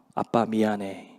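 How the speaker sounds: imitated fading, dying voice. Speaker retelling a child's words to his father from the back seat, imitating a fading, dying voice. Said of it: "죽어 들어가는 목소리로".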